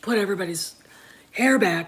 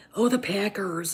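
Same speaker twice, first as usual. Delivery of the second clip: woman's Upper Midwest accent, Wisconsin style; 3 dB quieter than usual. Showing how speech changes back home: upper midwestern woman accent. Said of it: "talking like, you know, uh, m-, upper Midwestern woman".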